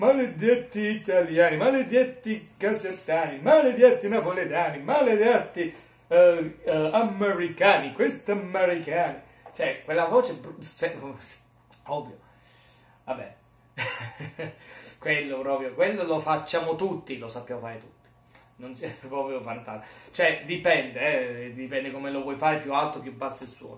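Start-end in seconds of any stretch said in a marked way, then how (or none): 0.0-9.2 high, loud, fake Russian accent. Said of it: "chi non imita la voce dei russi".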